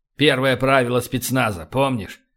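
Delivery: plain reading voice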